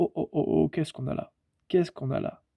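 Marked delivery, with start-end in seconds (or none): none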